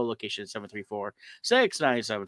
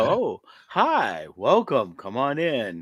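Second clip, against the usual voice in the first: put-on very slow, creepy kids' show host voice. Acting out a kids show opening welcoming viewers in: creepy kids show host voice. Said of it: "I don't sound creepy at all".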